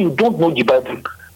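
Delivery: ordinary talk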